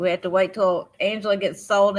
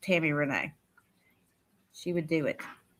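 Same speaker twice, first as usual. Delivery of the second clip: ordinary talk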